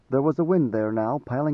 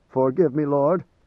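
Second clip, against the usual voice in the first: usual speaking voice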